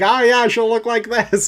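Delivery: put-on very high, squeaky little-kid voice. Joking about coloring a picture in with crayons, imitating a kid. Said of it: "like a kid".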